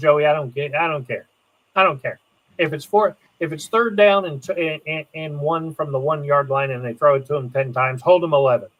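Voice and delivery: normal talking voice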